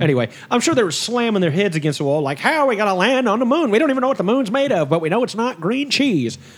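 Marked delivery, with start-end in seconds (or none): 2.4-6.4 exasperated, put-on voice. Acting out NASA engineers puzzling over the moon landing: put-on voice for NASA engineers. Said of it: "why I gave them that voice".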